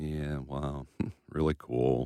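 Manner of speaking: sounding sad. [name] reacts to hearing how Colin teaches kids each week, sounding sad. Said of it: "why do you sound so sad?".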